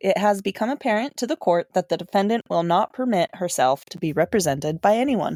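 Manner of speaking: normal talking voice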